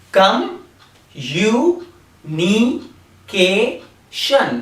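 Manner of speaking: "communication" split into syllables, very slow. Showing learners how to say the word in syllables: syllable by syllable.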